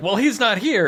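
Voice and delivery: high-pitched, panicked blurt with real panic. Retelling a show scene where the characters decide things: imitating characters in a panic. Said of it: "in a real panic".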